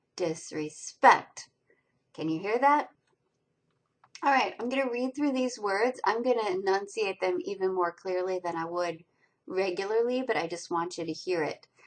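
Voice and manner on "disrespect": disrespect with lighter dis and peak on -spect. The speaker demonstrates word stress for listeners, stress on SPECT in disrespect. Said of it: "more stressed than the unaccented second syllable".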